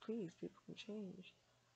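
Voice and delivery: ordinary talk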